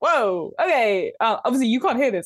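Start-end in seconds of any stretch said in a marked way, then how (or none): 0.0-1.1 chicken character voice. Voicing a freed chicken that was just tapped on the beak: voicing the chicken. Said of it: "the chicken is like".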